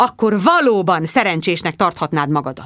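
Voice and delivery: ordinary delivery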